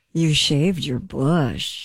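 very flirtatious, playful tone. Acting out a line for the others in a game, very flirty. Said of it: "very flirty".

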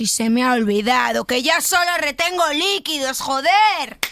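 angry outburst exploding on the last word.

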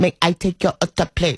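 imitated robotic voice. Retelling a drive-through order speaker that turned out to be a robot: imitating a robot voice. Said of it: "This is a robot".

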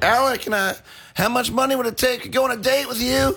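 high yell. Retelling how a man filming from outside yelled to a performer, retelling a yell. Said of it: "he's just yelled out".

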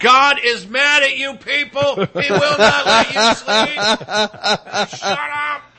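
put-on high, slow drunk ranting. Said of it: "And I'm hammered going".

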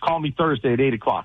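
ordinary talk, nothing marked

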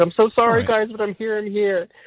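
very high-pitched, devastated, flustered and sorry. Retelling arriving twenty minutes late to a dinner: imitating his devastated apology. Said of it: "I was practically devastated".

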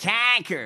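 mocking nasal accent. Mocking a rally speaker from Muskegon, Michigan: mocking nasal accent. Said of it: "that accent, that guy".

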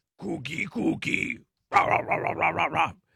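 drawn-out, rough, creaky voice. After another speaker compares him to Cookie Monster, answering in a Cookie Monster voice. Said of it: "that sounds like the Cookie Monster".

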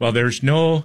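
bad put-on Irish accent. Quoting a news reporter in a terrible put-on irish accent. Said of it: "That's a terrible accent".

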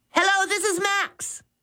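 very high, eager blurt. Max answers the ringing phone, blurting eagerly. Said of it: "he blurted eagerly".

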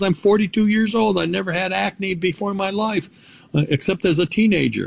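high-pitched, surprised voice.

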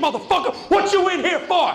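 high, loud mock taunting voice.

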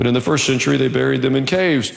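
ordinary delivery, nothing marked

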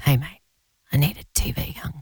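put-on mock whisper. Retelling how the other speaker sent voice notes: imitating someone whispering. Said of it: "'cause you were sort of whispering".

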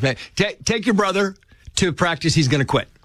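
light, mild hollering yell. Recounting how she yelled for his sister: retelling her yell. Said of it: "she yells".

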